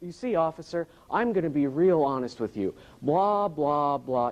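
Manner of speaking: put-on educated male voice.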